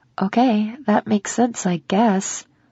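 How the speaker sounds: ordinary delivery, nothing marked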